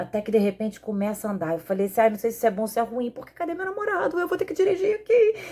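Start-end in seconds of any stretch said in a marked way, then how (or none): 3.3-5.3 high-pitched, trembling, rising nervous fretting. Retelling the car starting to move without her boyfriend: retelling her own trembling nervousness. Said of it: "E eu muito nervosa, tremendo".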